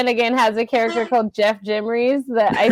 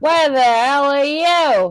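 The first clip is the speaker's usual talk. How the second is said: comic Australian-sounding voice; 4 semitones higher than usual. Reading a script line as Jerry, trying a Jim Jeffries voice. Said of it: "this Jim Jeffries voice that I'm about to try".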